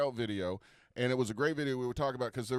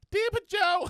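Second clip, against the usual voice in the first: put-on high-pitched girlish voice; 6 dB louder than usual. Retelling how classmates quoted the video during quiet english class. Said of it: "one of us would go".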